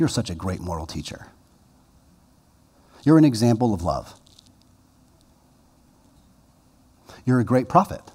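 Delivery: mock condescending tone. Quoting people who condescendingly praise Jesus, mock-condescending praise. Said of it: "condescendingly pat him on the head".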